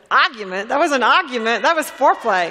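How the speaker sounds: put-on loud, joking Boston Italian accent. Quoting his reply when she offered to kiss and make up: Boston Italian accent. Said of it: "in his Boston Italian voice".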